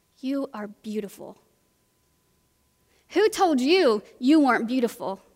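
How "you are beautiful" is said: very soft, quiet, hushed murmur. Retelling a woman holding a man's face and speaking to him, spoken quietly. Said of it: "she says quietly to his face".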